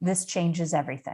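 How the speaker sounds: normal talking voice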